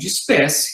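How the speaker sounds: ordinary talk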